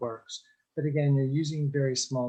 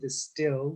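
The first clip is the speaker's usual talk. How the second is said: leaning hard on the word distilled. Giving listeners instructions, stressing the word distilled. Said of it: "and I stress the word distilled".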